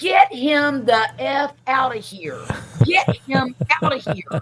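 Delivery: acted out high, drawn-out, agonised screaming. Retelling screaming at the doctor while in labor: retelling own screaming. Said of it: "I'm screaming at the doctor".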